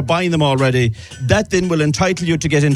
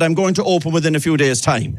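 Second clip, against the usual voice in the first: ordinary talk, nothing marked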